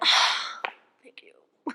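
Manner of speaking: whispered words. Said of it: "I'm like".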